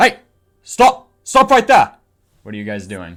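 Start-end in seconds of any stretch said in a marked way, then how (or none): 0.0-2.0 shrill, very loud, high-pitched shouting. The narrator voices three guards shouting at the party behind a door, guards shouting. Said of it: "and they're shouting at you".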